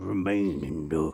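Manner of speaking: sinister, menacing tone. Speaker repeats the show's sign-off, sinister. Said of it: "more sinister than I intended".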